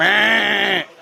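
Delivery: drawn-out bleating like a goat. Answering a request for farm animal noises: goat impression. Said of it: "I do a good goat".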